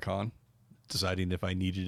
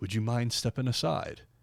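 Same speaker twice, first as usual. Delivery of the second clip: put-on gentle, courteous English accent; 4 semitones higher than usual. Retelling meeting Peter Mayhew, who looked down at him: soft English Peter Mayhew voice. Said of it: "in a real soft English voice".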